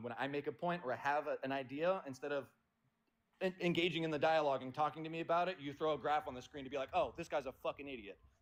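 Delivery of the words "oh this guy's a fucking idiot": mock condescending tone. Speaker confronting the other person in an argument, acting out a mock-condescending remark. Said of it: "don't do it in a condescending tone".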